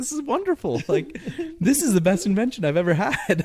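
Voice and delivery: very high voice, chuckling and laughing, acted out. Retelling how a guy kept calling back, imitating someone laughing to himself. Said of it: "laughing to himself".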